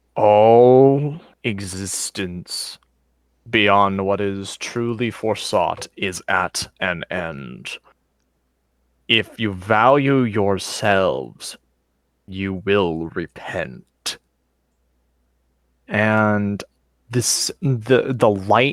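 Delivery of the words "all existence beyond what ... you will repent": ominous, otherworldly voice, drawn-out All. Narrating a scene where a weird aura appears, voicing it in an ominous voice. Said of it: "a sort of ominous voice comes forth".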